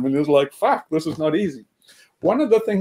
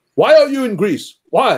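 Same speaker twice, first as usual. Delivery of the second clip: hostile, confrontational, pitched-up grilling tone; 5 semitones higher, 4 dB louder than usual. Retelling a man in greece who got hostile with him, mimicking a hostile man. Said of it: "he got hostile".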